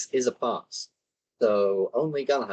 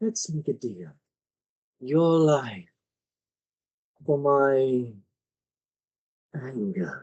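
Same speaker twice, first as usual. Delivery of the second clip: whispering close, higher and slower; 2 semitones higher than usual. Game master voicing a spellcaster's words to the players, whispering in their ears. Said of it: "you just hear these words whisper in your ear".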